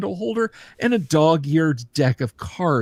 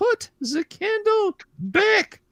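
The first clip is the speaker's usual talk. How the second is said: put-on very high, slow, lilting accented woman's voice. Voicing a woman heard through a secret door: lilting accented woman's voice. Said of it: "You hear the lilting, accented, uh, voice of a woman say".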